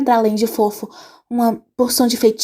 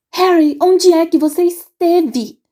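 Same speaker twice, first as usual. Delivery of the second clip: squeaky, shrill, pitched-up voice; 6 semitones higher, 4 dB louder than usual. Narrator reads Hermione's question to Harry, in a shrill voice. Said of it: "com a voz esganiçada".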